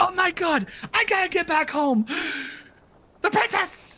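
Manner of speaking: frantic, high, hushed panicking. Telling a story, acting out someone freaking out. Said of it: "he starts freaking out".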